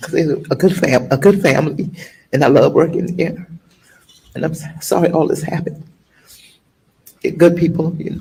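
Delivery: talking while crying, tearful. Answering a questioner's question about her tears, crying while talking. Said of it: "Why are you crying".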